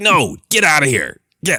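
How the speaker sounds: very high, extremely rude, barking dismissive tone. Imitating a rude gatekeeper droid shooing someone away: extremely rude droid voice. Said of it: "Extremely rude".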